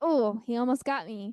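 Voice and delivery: ordinary talk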